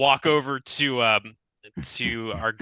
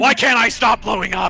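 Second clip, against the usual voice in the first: all-in, very high, loud superhero voice; 10 semitones higher, 6 dB louder than usual.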